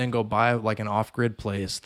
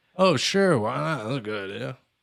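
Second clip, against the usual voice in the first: heavily sarcastic, dripping with irony; 3 semitones higher than usual. Retelling another speaker's reply to a suggestion: imitating a sarcastic reply. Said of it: "He, like, said that so sarcastically".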